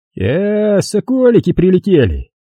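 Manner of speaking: sneering, mocking tone. A man half-rises as two visitors come in, greeting them with a snide smile. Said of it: "ехидно улыбаясь".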